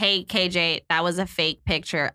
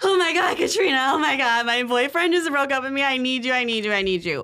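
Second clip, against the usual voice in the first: mock, high, frantic screaming; 6 semitones higher than usual. Retelling a friend's frantic phone call at dinner, imitating Sarah screaming frantically. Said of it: "Like screaming".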